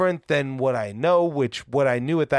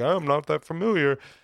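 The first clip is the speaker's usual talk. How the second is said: put-on doofy, goofy voice. Imitating how they usually sound, doofy self-impersonation. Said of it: "your impersonation of yourself makes you sound so doofy".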